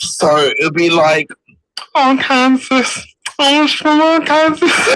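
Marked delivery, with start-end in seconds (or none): 1.9-5.0 put-on Liverpool Scouse accent, much higher pitch. Imitating a man from Liverpool in his Liverpudlian Scouse accent. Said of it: "he's got like a Liverpudlian Scouse accent".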